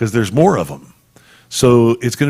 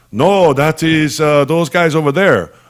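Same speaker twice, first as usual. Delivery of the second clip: really bad, clumsy put-on Chinese accent; 4 semitones higher, 4 dB louder than usual. Acting out an imagined reply to a question, in a really bad Chinese accent. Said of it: "really bad Chinese accent".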